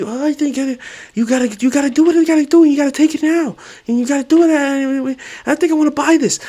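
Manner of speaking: very high hustle-talk voice, hammering insistently. Doing a Gary Vee impression, possibly closer to Mike Tyson: Gary Vee impression. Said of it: "Let's see if I did this Gary Vee impression right".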